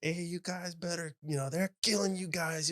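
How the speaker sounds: put-on very high, pushed Hawaiian accent, yelling. Retelling a fight story, imitating Coach Keen's Hawaiian accent as he fires up players. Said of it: "in his Hawaiian accent".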